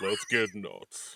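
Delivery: big deep put-on voice. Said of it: "that big, deep [name] voice".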